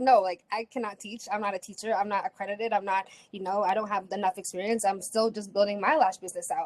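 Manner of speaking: normal talking voice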